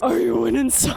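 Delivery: low, rough, dopey cartoon voice. Showing the voices Ellie does, the speaker switches to the Patrick Star voice. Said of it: "Patrick Star voice".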